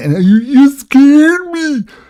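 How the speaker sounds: high, loud, cowardly, utterly whining voice. Mocking a man whose voice the listeners can hear, imitating a whiny voice. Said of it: "Do you hear the utter whine?".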